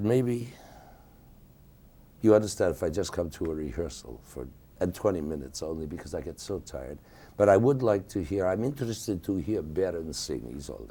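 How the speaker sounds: ordinary talk, nothing marked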